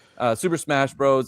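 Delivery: plain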